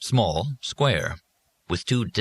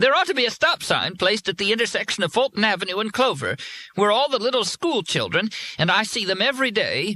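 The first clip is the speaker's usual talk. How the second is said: very high, shrill female voice; 12 semitones higher than usual. A caller phoning a radio show host; shrill female voice. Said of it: "a shrill female voice said".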